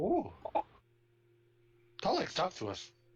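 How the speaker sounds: high, swooping, koboldy creature voice. Calling out to the monkeys in the trees, koboldy voice. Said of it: "I'm doing my koboldy voice".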